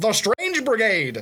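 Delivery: put-on old-time 1950s radio announcer narrator delivery. Streamer describing a game he played, doing its narrator's 1950s radio voice. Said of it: "I'm gonna do the guy's voice. There's a narrator that has like that nineteen fifties radio voice".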